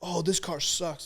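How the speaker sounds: mock griping, venting tone. Retelling a driver's radio complaint after passing: imitating Max screaming. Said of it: "he started screaming".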